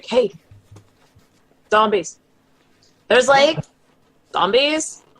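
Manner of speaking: loud stage whisper. Calling back to another character, loud enough to hear, in a stage whisper. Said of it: "stage whisper".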